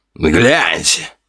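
mocking, jeering, taunting cry. Khimera, leading the bandits, calls out as Tim comes to, mockingly exclaiming. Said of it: "насмешливо воскликнул Химера".

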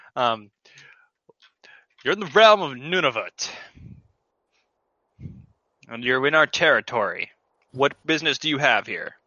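tough, hard-talking woman's voice. Speaker voicing a character who challenges newcomers to their realm, in a tough voice. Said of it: "Make her tough".

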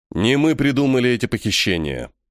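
ordinary delivery

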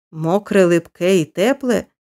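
usual speaking voice

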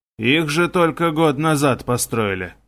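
ordinary delivery

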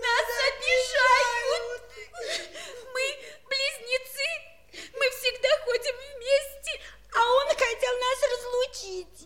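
crying, whining voice. Twins complain to the chair of a meeting, crying and complaining. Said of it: "Да не плачьте вы!".

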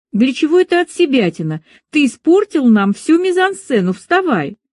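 irritated exasperated tone. [name], expecting praise after the duel scene, scolds Sergei, irritated. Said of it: "в голосе Марини ... послышалось раздражение".

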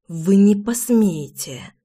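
feral, wild cat-like hiss. Reading a novel aloud, the heroine's reply to the narrator, hissed like a wild cat. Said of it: "прошипела Лина дикой кошкой".

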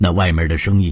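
ordinary delivery, nothing marked

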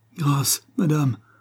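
teeth-chattering stammer. Accused of murder by a countess, a man replies, stammering in terror. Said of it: "balbutia le portugais, dont les dents claquaient d'effroi".

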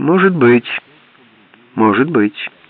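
noncommittal. The sheriff answering Bart's question, evasive. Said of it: "уклончиво ответил шериф".

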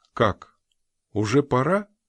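courteous, polite, mildly astonished surprised tone. The hostess reacts as her guest Jones again rises to leave; politely surprised. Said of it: "вежливо удивилась хозяйка".

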